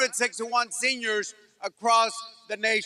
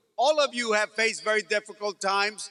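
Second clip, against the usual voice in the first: ordinary talk, nothing marked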